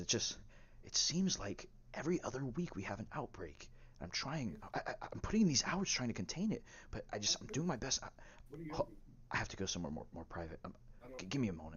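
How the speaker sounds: hushed, soft voice. Voicing a scientist on the phone outside: hushed voice. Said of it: "you can hear him keeping his voice down".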